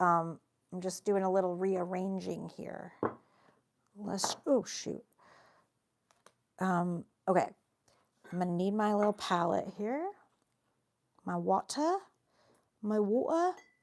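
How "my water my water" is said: slow, drawn-out fake British accent. Rearranging supplies and reaching for the palette: put-on British accent. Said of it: "look at me with my, my British accent".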